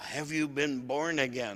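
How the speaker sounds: ordinary delivery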